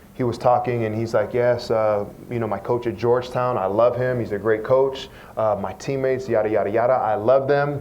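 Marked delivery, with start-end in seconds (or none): none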